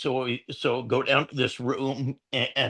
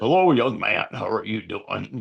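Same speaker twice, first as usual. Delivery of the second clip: voice dropped way down, deep; 3 semitones lower than usual. Retelling meeting an actor recognized by his voice; imitating a deep voice. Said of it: "deep voice and everything".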